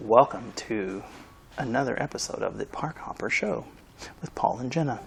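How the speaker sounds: whispering. Opening the show's episode with the co-host, whispering. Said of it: "Why are you whispering?".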